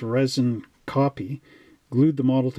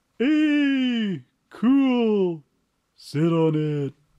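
"hey" stressed, stretched out, and raised in pitch; 8 semitones higher than usual. Asked by the host to talk like the Fonz, [name] does a Fonz impression. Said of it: "that was a pretty cool impersonation of the Fonz".

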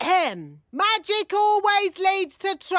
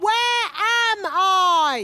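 louder voice; 3 semitones higher than usual. Asking a robot again after being told to ask louder: asking louder. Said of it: "maybe ask louder".

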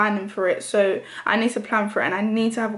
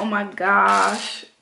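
sudden put-on American accent slipping out. Showing how a random slip into talking sounds: put-on American accent. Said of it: "all of a sudden have an American voice".

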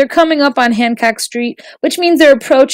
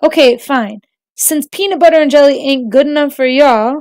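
plain reading voice

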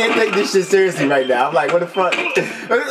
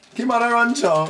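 poor, unconvincing put-on Jamaican accent; 3 semitones higher than usual. Playing a video game and echoing a character's line: bad Jamaican accent. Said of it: "I can't do that Jamaican accent".

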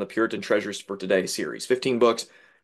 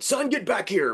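put-on, very high-pitched, loud calling voice; 11 semitones higher than usual. A son recounts what his father said when he ran to the truck, loudly. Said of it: "with a loud voice".

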